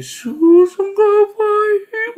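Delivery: very high, very loud, shrill, piercing ghostly wailing cry. Retelling a mother crying out at three in the morning: imitating a ghost-like scream. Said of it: "Dia teriak".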